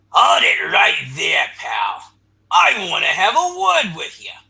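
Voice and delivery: rough, harsh snarl through every word. Narrator reads a figure moving in the shadows of a ruined lab, harsh snarling voice. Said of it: "a harsh, snarling voice".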